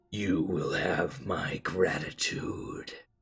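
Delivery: whispered, mysterious voice of an unseen entity. Voicing a voice heard in darkness asking for a champion: voice of the unknowable. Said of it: "I am the unknowable".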